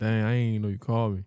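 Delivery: ordinary talk, nothing marked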